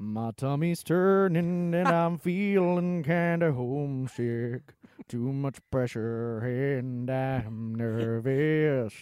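very slow delivery, every word dragged out. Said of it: "I was being [name]".

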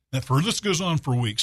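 ordinary delivery

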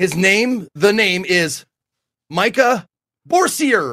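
very American accent, Americanized all the way, swooping. Saying a name after joking about saying it very american: very american pronunciation. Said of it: "very American then".

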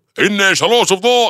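barked military announcer voice. Opening the narration of a facts segment: military-style barked announcement. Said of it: "אני עושה את זה בצבאי כזה".

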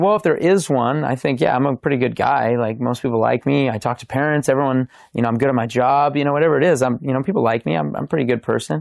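ordinary talk, nothing marked

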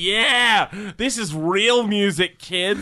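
slow, proud, lecturing pronouncement. Mocking a dad at a band's show, imitating a dad at the show. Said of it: "It's just like".

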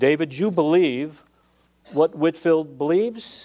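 dripping, heavily sarcastic, jabbing tone. Retelling an atheist's question about a preacher: imitating a sarcastic tone. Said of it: "with a great deal of sarcasm in his voice".

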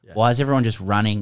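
ordinary delivery

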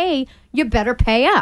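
ordinary talk, nothing marked

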